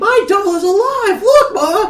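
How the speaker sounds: put-on very high, slow, excited kid voice.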